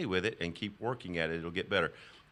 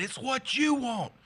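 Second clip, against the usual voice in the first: very high, loud screaming; 5 dB louder than usual. Retelling screaming back at a woman on the phone: imitating his own screaming. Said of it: "I screamed right back at her".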